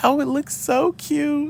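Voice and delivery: deliberately bad put-on voice, very high and slow. Imagining what she said on seeing it: bad Sonali impression. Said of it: "That was me trying to do my voice like Sonali".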